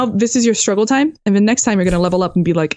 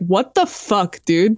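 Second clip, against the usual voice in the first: slow, drawn-out, put-on, appalled, disgusted exclamation. Acting out Santa arriving at a messy home: imitating Santa, put-on disgust. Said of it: "Santa shows up and is like".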